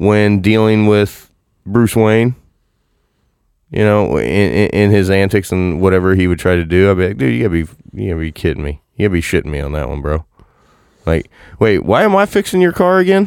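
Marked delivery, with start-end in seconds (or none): 7.2-13.3 heavily sarcastic with a swooping tone. Imagining reacting to someone's antics, acting out a sarcastic tone. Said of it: "I would probably have a more sarcastic tone".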